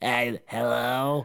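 play-acted dazed, lost, hungover-sounding voice. Acting out a sales call made while hungover: imitating a hungover lost voice. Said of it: "sound like".

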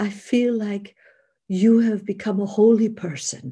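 put-on Austrian-accented speech. Speaker retells a woman calling him two weeks later, imitating her Austrian accent. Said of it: "she has this Austrian voice".

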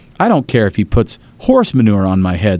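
plain

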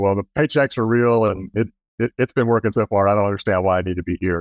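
ordinary delivery

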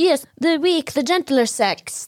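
put-on old-timey radio announcer voice, high and slow. Asked whether it's a southern accent, speaker shows the voice: old-timey radio voice. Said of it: "that's like an old-timey radio".

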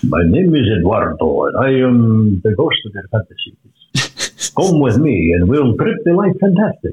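slow, almost vampire-like voice. Playing eduardo, the ghost of fantasies: almost vampire-like voice. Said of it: "Sounds almost like a vampire".

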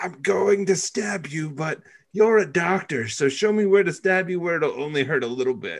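loud, high stage whisper meant to carry. Retelling a film scene where one character threatens a doctor: imitating a loud stage whisper. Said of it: "stage whispers to the doctor very loudly".

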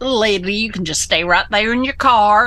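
mild, courteous, polite little Southern drawl. Retell how the guy politely answered when you asked where to park, imitating his little southern drawl. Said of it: "in his little southern drawl".

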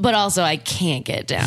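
usual speaking voice

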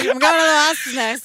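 put-on drunk voice with slurring. Joking about a bar name, imagining saying it: pretend drunk voice. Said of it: "Imagine saying that hammered".

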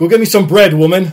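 very loud, jokingly bossy delivery. Explaining a joke that women hate, delivered as a mock-bossy joke. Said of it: "And I say it jokingly".

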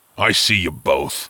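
grim, surly, sullen tone. A giant speaks to two people hiding under blankets, grim and surly. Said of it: "came a grim and surly voice".

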